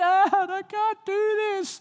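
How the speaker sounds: put-on very high, loud, drawn-out screaming kid voice. Retelling how a daughter with leeches on her toes begged: imitating a child screaming. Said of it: "she's screaming".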